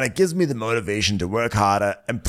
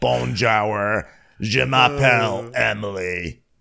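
put-on slow French words in plain American accent. Retelling a tv character's french: imitating french with no french accent. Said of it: "not even trying to do a French accent".

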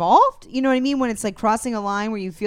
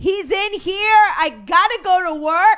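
put-on very high, very slow, shrill, drawn-out holler; 10 semitones higher, 5 dB louder than usual. Stuck on a train as police search cars, retelling a woman's yell.

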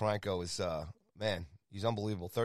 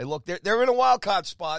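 slight Boston accent, much higher, louder; 11 semitones higher, 12 dB louder than usual. Talking about a team sitting in a wild card spot, in a slight boston accent. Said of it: "that was a little Boston accent I think I just put in there".

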